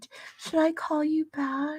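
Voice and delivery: very high, soft, sugary, sweet-innocent voice. Retelling what a woman said, in a mocking innocent, sweet, stupid voice. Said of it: "that s little freaking innocent, sweet, stupid voice".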